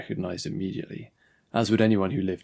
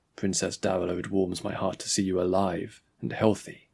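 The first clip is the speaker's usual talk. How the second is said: plain reading voice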